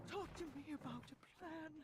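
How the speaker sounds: whispering knight voice. Narrating a game scene, the knight speaks to you, whispering. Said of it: "The knight whispers to you".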